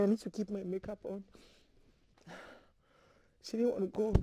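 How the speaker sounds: crying while talking. Recounting a young girl's sad story, crying while talking. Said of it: "I'm sorry I'm crying".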